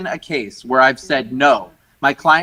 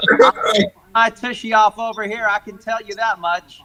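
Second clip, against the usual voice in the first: exaggerated thick Mississippi accent, pitched up; 6 semitones higher than usual. Acting out her answer to a buyer's attorney on a call, imitating Melora's thick Mississippi accent. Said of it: "thick Mississippi accent of hers".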